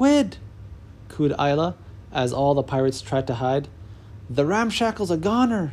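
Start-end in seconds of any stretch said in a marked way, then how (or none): 4.3-5.7 whispered, much higher pitch. As the monster towers over the pirates' ship, Red Bart speaks: whispered. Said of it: "whispered Red Bart".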